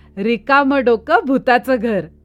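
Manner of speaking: laughing loudly while speaking. A narrator riding home at night speaks to himself with a loud laugh. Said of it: "मी झोरात हसलो आणि म्हटलं".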